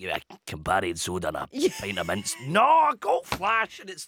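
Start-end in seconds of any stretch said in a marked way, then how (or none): 0.0-2.4 rattled off in a tough hardman voice. Asked who a voice sounds like, doing a Big Man impression. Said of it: "you doing the big man impression".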